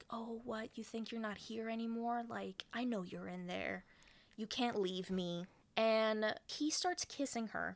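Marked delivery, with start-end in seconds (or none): 0.1-5.5 quieter mock-taunting tone. Retelling a man taunting a woman sitting in a bathroom, retelling a taunt. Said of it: "he's kind of like taunting her".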